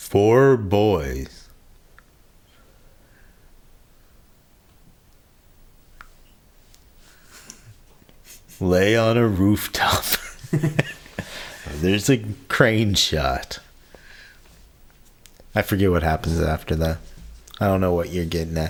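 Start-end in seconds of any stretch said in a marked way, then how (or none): 0.0-13.6 put-on slow nineties movie-trailer narrator voice, "boys" stretched. Asked to map out a movie scene, in a nineties trailer voice. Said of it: "nineties trailer voice".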